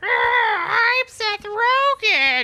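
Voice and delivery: put-on very slow, drawn-out, high evil old witch voice. Attempting a seth rogen voice that comes out as a witch: evil old witch voice. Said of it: "I sound like an evil old witch".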